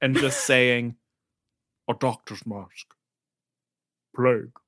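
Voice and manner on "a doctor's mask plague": monstrous beast voice, altered by voice changer. Imitating the Beast looking around Belle's house: Dan Stevens Beast voice. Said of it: "That's my favorite voice that you do".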